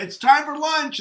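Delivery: shrill, very loud, high-pitched holler. Retelling how a colleague calls everyone on a loudspeaker: imitating someone hollering. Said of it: "she's hollering".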